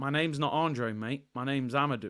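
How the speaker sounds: put-on English accent. Retelling a video where the player suddenly switches to English: imitating Amadou Onana's English accent. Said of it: "breaks out into an English accent".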